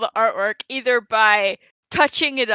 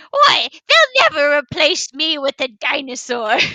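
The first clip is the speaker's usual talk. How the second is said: nasty little character voice, higher; 5 semitones higher than usual. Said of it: "I love his little nasty voice".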